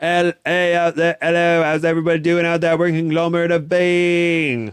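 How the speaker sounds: high, loud, belted rock frontman shout. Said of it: "if some British punk band wants conglomerate".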